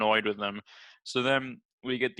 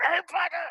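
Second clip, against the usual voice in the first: very high, mock furious shriek. Retelling a movie scene, imitating Dumbledore getting angrier. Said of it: "he progressively gets angrier when he says it".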